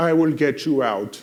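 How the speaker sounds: put-on very loud, booming German accent. Retelling a man's offer to get the stuck speaker out, in a Terminator-like accent. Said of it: "Terminator-like accent".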